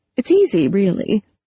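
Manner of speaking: ordinary delivery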